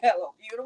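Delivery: acted-out tearful voice, speaking through tears. Retelling speaking to herself in the mirror: imitating own past crying. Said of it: "I'm looking in the mirror and I'm crying".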